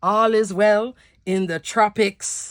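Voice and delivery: put-on Jamaican accent. Signing off a crafting video with a joke line: Jamaican accent. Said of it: "that's my Jamaican accent".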